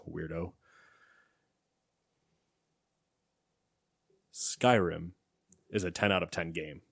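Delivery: put-on deep, dropped voice. Reading out a submitted comment to a co-host, in a deep voice. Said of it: "I'll put it in a deep voice for him".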